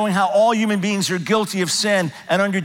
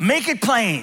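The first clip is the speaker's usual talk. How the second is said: mild, called-out, put-on yelling; 2 semitones higher than usual. Retelling someone in the congregation calling out mid-sermon: imitating someone yelling. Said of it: "somebody in the congregation yells out".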